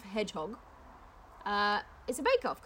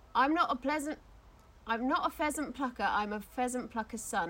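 ordinary talk

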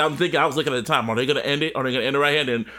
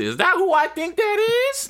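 put-on sing-song, very high, swooping old grandma voice. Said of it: "I'm sounding like the grandmother from fucking Good Kid Mass".

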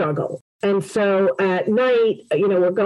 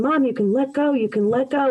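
mock tender, reassuring, acted-out pleading; 4 semitones higher than usual. Recalling talking to their mother at the very end, retelling a plea to let go. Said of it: "son pleads with dying mother to let go".

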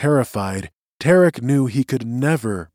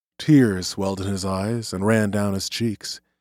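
ordinary delivery, nothing marked

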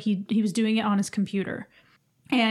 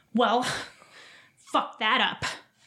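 imitated nerdy voice, slower. Describing a man who quit out of DDR, the speaker quotes him in a nerd voice. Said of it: "he has this, like, nerd voice".

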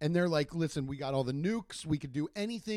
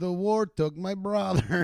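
loud, put-on Russian accent; 6 dB louder than usual. A speaker says a line the other speaker then praises: russian accent. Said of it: "I love your Russian accent".

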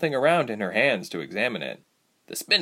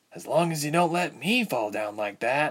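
muttered quietly under the breath, aside; 3 semitones higher, 3 dB quieter than usual. Narrator reads Ilse as her pallet is let down from a tree, muttered to herself. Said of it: "Ilse muttered to herself".

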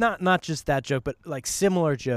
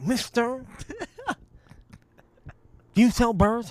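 put-on lispy, squeaky, high-pitched voice; 9 semitones higher than usual. Retelling a story about a customer walking into a pet store, lispy, high voice. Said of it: "a voice that's difficult to understand, sort of a lispy, high".

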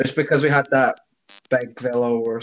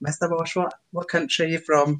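put-on Scottish accent, much higher; 5 semitones higher than usual. A teacher in Alloa imitates them asking where he is from, heavy East Coast Scottish accent. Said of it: "Heavy East Coast Scottish accents".

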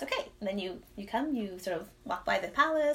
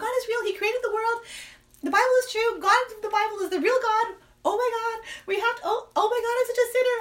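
mock, high, frantic, panicked freak-out; 13 semitones higher, 7 dB louder than usual. Retelling telling a husband what was realized: imitating freaking out. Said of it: "freaking out".

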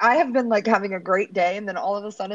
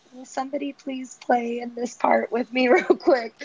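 put-on sweet voice, higher pitch; 4 semitones higher than usual. Retelling how Ian went to every room asking for help: imitating sweet little Ian. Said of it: "sweet little Ian going to every room being like".

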